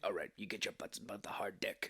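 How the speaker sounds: very deep, hushed, low and breathy voice. Retelling a movie scene, imitating Michael Ironside's deep voice. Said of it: "He's got a very deep voice".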